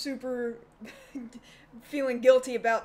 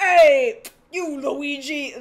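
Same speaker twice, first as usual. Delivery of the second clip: loudly belted out in a character voice; 3 semitones higher, 11 dB louder than usual. Discussing the Super Mario Bros. Super Show's Mario voice, doing Captain Lou's Mario voice. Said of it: "Captain Lou's voice".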